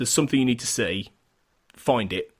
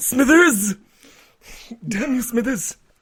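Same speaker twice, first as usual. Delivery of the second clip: very high, loud, cartoonish botched old-film voice; 12 semitones higher, 5 dB louder than usual. Joking that the impression sounds like someone else: Mister Burns voice. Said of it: "I sound more like Mister Burns".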